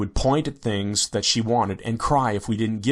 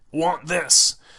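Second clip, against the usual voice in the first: put-on cave child voice, much higher pitch; 6 semitones higher than usual. A father retells his daughter pointing and asking for something, in a cave child voice. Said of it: "said in her cave child voice".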